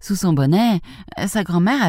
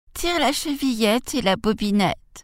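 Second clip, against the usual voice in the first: delighted, joyful, pitched-up voice; 7 semitones higher, 3 dB quieter than usual. A grandmother in bed calls to the visitor she thinks is her granddaughter, joyful. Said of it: "toute joyeuse de voir sa petite fille".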